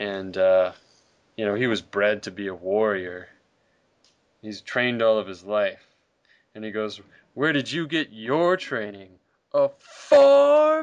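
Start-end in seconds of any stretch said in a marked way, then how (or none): 7.3-10.8 loud, swooping, play-acted nasty taunt, "farm" drawn out. Recounting the villain taunting Superman about his training, imitating Zod's nasty tone. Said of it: "he just has such a nasty tone of voice in it".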